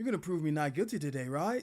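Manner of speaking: put-on surfer-dude character accent. Voicing a game character who wants to be proven not guilty, surfer dude accent. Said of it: "I gotta do the surfer dude accent".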